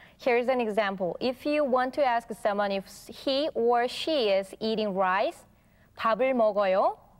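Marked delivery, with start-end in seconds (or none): 6.0-7.0 pitch rises at end of 먹어요, final 요 lifted. Demonstrating a Korean question for learners, with rising question intonation. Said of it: "With a voice going up a little bit".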